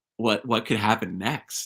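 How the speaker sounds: ordinary delivery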